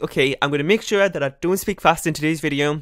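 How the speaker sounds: ordinary delivery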